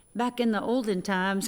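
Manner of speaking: ordinary talk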